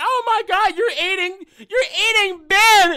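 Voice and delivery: put-on teary blubbering, high and whimpering fake crying. Acting out a joke scene where Sue watches Ben get eaten: mock crying as Sue. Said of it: "Sue gonna be crying".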